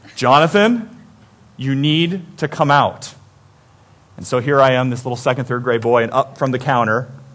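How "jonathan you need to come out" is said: slow, drawn-out calling voice. Retelling hiding as a boy when his father called for him: imitating his father's voice. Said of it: "Sounding more and more like him every day".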